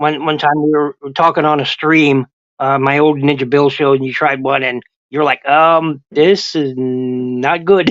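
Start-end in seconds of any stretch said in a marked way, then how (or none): 5.5-7.9 play-acted distressed, very slow, not drawn out. Retelling a friend's reaction to a bad candy: imitating a distressed voice. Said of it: "Your voice sounded very distressed".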